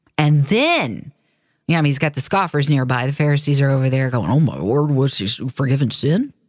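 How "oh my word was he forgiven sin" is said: put-on scoffing American Southern accent, exclaimed. Retelling a Bible scene, voicing the scoffing Pharisees in a Southern voice. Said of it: "a southern voice".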